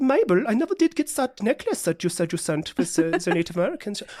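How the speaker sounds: put-on German-accented voice. Retelling a story between two people, speaker voices one of them in a German accent. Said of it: "Good German accent".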